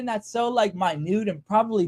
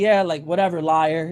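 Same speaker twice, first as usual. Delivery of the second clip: mock-condescending brush-off tone, much lower; 4 semitones lower than usual. Retelling how a lady brushed off what they said about the cart, imitating a condescending tone. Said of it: "in the most condescending tone".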